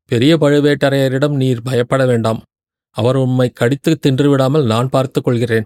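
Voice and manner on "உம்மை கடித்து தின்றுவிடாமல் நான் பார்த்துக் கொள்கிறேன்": ordinary delivery, nothing marked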